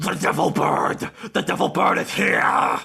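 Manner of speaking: raspy, rough, creaky demon yell. Narrator voicing a creature in the middle of the clearing, yelling.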